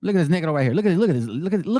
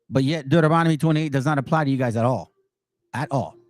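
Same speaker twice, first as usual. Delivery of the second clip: normal talking voice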